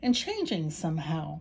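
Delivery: plain reading voice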